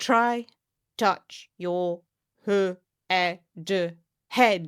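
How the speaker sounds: very slow, very drawn-out robotic voice. Demonstrating a children's movement game, giving a command in a put-on robot voice. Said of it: "I know my robot voice isn't the greatest".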